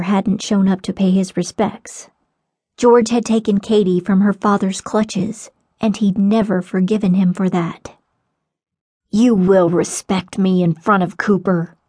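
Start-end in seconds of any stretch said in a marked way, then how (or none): 9.1-11.7 hissed, sharp hissing delivery. Narrator reads the father's words to Katie at the grave, hissed. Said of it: "her father hissed".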